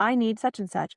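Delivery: normal talking voice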